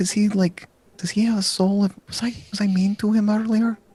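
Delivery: put-on whispered girl character voice. Voicing a girl peeking from the covers at a player: whispering girl character. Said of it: "whispers to you".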